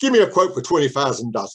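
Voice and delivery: put-on thick, broad Cockney accent laid on heavily. Retelling a man named Paul asking for a quote, Paul's broad Cockney accent. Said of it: "in a broad Cockney accent".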